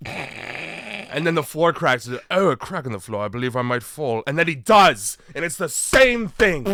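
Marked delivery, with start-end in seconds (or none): 2.3-4.2 put-on strong British accent, spoken fast. Retelling a YouTube video of a guy in his house, very British accent. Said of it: "he's got a very British accent".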